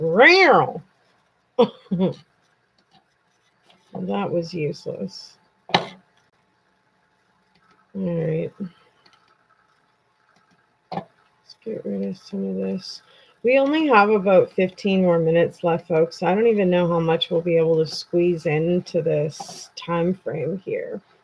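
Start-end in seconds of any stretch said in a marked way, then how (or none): 0.0-0.8 loud, irritated yelp let out. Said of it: "Sometimes I get super irritated and I'm just like".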